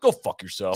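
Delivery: deep, very low mutter, still audible. Retelling a golfer's reply to a shout from the crowd: imitating a mutter under the breath. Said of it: "just goes under his breath".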